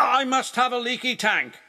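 snapping. Narrator reading an engine's answer to another engine's teasing, snapped. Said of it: "snapped Spencer".

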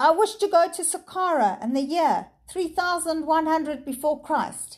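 high calling out. A professor holding up a stone makes his wish aloud, cried out. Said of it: "he cried".

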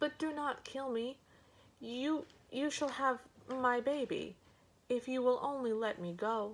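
high, trembling, begging tone. A woman caught drinking an ogre's water answers him, trembling all over. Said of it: "trembling all over".

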